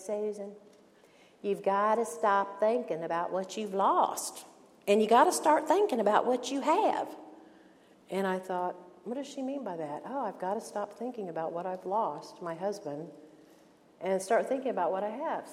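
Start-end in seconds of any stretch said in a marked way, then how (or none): 0.0-7.1 put-on Southern accent, Atlanta style. Retell what a woman who loves you told you after lunch, imitating her Atlanta accent. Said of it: "in her Atlanta accent".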